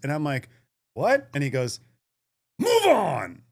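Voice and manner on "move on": put-on furious shout, very high-pitched. Retelling the bar owner yelling at him, imitating a furious shout. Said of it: "He is furious".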